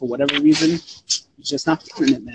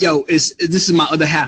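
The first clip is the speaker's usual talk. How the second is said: ordinary delivery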